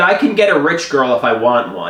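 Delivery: ordinary talk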